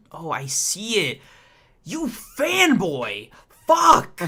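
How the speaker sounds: very slow, dawning, sinking-in realization. Retelling own earlier reaction on noticing the likeness: imitating own past reaction. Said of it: "I was like".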